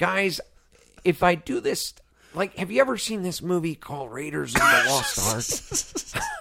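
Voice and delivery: rambling voice in a celebrity actor's manner. Showing a Jay Baruchel impression nominated for best impersonation: Jay Baruchel impression. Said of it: "I feel like that's a Jay Baruchel".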